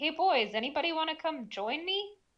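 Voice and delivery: loud, high hollering call pitched upward. A player's character calls up to the others above, hollering up. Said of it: "I'm gonna holler up and just say".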